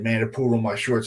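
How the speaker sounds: normal talking voice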